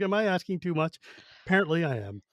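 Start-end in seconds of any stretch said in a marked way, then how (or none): none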